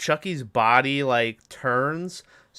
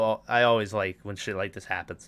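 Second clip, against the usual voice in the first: usual speaking voice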